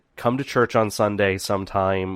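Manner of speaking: normal talking voice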